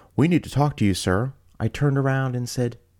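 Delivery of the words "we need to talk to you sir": acted out high, barked tone. Retelling a gentleman ordering the speaker to stop: imitating someone barking an order. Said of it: "barked at me".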